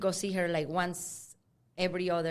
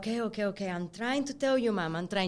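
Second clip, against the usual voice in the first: mock-panicked, acted freaking-out voice; 3 semitones higher than usual. Retelling trying to tell mom something, acting out freaking out. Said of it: "I'm freaking out".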